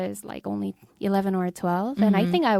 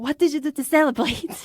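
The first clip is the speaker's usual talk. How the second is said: very heavy, thick fake German accent, pitched up; 7 semitones higher than usual. Recounting a film scene, the speaker voices a reporter's question in a bogus thick German accent. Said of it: "in like this most bogus thick German accent goes".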